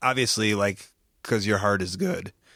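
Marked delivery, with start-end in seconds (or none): 1.2-2.3 voice cracking, lower pitch. Speaking to the other person, voice cracking. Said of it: "As my voice cracked".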